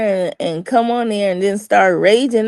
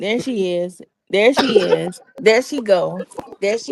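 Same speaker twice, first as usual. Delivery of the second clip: ordinary delivery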